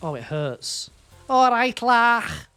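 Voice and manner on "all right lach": very loud, high, put-on Liverpool Scouse accent. After saying the Scouse accent hurts to hear, the speaker does one: Scouse accent. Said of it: "but Scouse accent".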